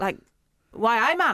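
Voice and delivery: put-on Geordie, Newcastle dialect. Asked to do a British accent after saying you don't know any, try a put-on Newcastle accent.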